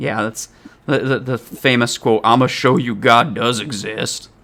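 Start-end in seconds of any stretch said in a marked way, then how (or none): 2.2-4.2 bad, crappy put-on Southern accent. Speaker repeats a famous movie quote to a co-host, in a crappy southern accent. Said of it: "the crappy Southern accent".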